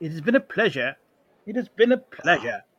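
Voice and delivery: stiff, starchy, stuffy put-on British accent. Asked to say the farewell again, the speaker does it in a stuffy British accent. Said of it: "Give me it in a good stuffy British accent".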